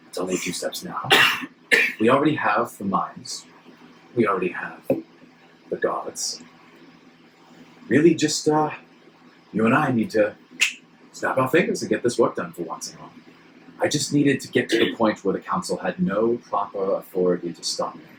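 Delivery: muttering under breath. Narrating a character walking out beside the player, muttering under his breath. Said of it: "he's muttering under his breath".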